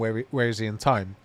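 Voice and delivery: plain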